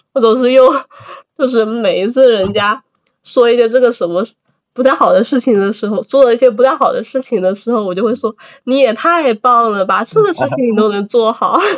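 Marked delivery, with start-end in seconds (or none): 8.7-11.6 mock snide, insincere, sarcastic backhanded tone. Showing what gets said when others do something badly: imitating own sarcastic praise. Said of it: "我自从学会了阴阳怪气以后".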